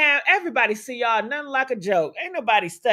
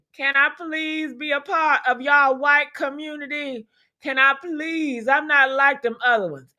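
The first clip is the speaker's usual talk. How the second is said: abject, imploring, pleading, begging voice; 4 semitones higher than usual. Retelling how some men plead to join a community: mock pleading and begging. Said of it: "pleading and begging".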